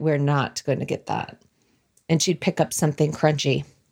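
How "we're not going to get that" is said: put-on disdainful tone, lower pitch and quieter. Retelling mom walking past the bread at the store, imitating mom's disdain. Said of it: "walk past that bread with disdain and say".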